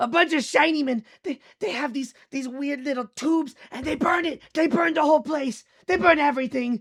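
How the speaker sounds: panicked, frantic, very high, shrill and loud. Voicing a character in an alley scene, the speaker talks in a frantic voice. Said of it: "like frantic".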